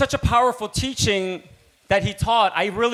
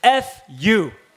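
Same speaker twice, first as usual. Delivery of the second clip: usual speaking voice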